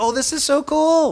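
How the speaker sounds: really gentle, high and slow. Retelling what a gentle question to students would sound like: imitating own gentle tone. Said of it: "I was actually using a really gentle".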